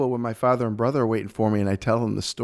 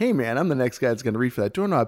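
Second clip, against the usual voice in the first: mock light, playful, friendly teasing tone; 2 semitones higher than usual. Retelling an argument over washing hands, repeating his own line playfully. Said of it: "kind of playfully".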